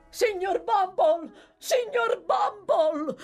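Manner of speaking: feigned, high, agitated, distressed cry of alarm. Noah, having run to the workhouse gate, calls for mr bumble, shouting in feigned dismay. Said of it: "urlò Noah, imitando magnificamente lo sgomento e con un tono di voce talmente afflitto e agitato".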